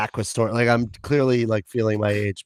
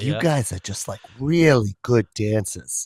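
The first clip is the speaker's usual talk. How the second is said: put-on light Boston accent. Retelling what Mom said about their dancing: imitating Mom with a little Boston accent. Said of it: "What's with the accent you're giving her".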